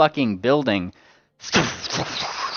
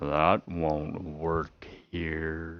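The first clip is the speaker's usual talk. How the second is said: much deeper, very soft, hushed, slow, drawn-out voice; 9 semitones lower, 10 dB quieter than usual. Voicing a griffin character whose voice suddenly gets much deeper: much deeper voice. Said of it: "his voice gets, like, a really deeper, uh, like, a lot deeper".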